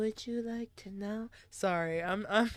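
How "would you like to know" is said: monotone, flat, level delivery with no lift at all. Trying out a new voice for a character who asks a question: flat voice. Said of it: "Kinda give her a flat".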